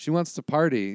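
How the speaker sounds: usual speaking voice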